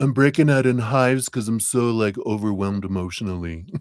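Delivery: talking-dog character voice. Explaining a feeling in the voice people give to a dog. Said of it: "I'm trying to do in like a dog voice".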